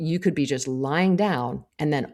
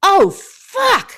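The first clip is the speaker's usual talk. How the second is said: very loud, high, shrill, sudden yell; 9 dB louder than usual. Retelling a sudden vertigo spell as someone walked in, re-enacting a yell. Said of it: "I yelled".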